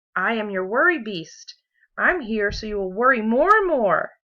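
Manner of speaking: loud, scary, booming monster voice. Reading a story, voicing the furry creature that comes out of the bag in a scary voice. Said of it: "the creature said in a scary voice".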